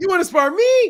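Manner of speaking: derisive high-pitched sneer. Mocking how a boxer supposedly asked to spar: mocking imitation of Clarissa Shields. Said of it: "Clarissa Shields sound like that?".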